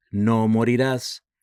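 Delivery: ordinary delivery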